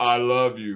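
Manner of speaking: offhand, indifferent, non-committal tone. Retelling how Connery says his line at the sumo fight: imitating Connery's non-committal delivery.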